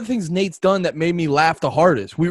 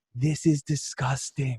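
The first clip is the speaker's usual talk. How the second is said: quiet, hushed, close-up whisper; 4 semitones lower, 8 dB quieter than usual. Telling a story, quoting what someone whispered in the speaker's ear: retelling a whisper. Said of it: "he just whispers in my ear".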